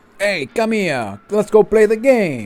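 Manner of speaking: put-on Italian accent. After a recap, the speaker kicks things off in their best italian accent. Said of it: "that was my best Italian accent".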